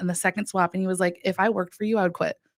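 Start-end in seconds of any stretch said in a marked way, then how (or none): 1.2-2.3 put-on kind-sounding voice. Retelling blunt feedback from a mentor: imitating someone speaking kindly. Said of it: "he said that to me so kindly".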